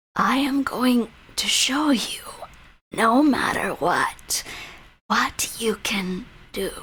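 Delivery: wheezy, spluttering, sputtering monster voice. Narrating a fight, the speaker voices the Hydra in a sputtering, wheezing voice. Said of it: "from the sputtering, wheezing voice of the Hydra".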